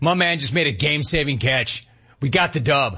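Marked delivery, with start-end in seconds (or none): none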